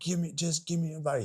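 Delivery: high, yelling, demanding tone. Retelling a traffic stop, quoting the pulled-over driver: imitating someone yelling. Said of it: "He's yelling at me".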